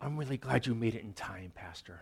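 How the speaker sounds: soft, very theatrical, grand dramatic delivery. Pastor recalling a woman in bed greeting him: imitating Minnie's dramatic voice. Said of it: "very dramatic voices".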